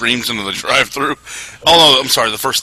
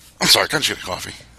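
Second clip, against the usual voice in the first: put-on calm male voice, lower; 3 semitones lower, 4 dB quieter than usual. Retelling a drive-through video after a scream: imitating a calm guy voice. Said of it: "normal ca-, calm guy voice".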